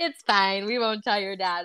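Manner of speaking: ordinary delivery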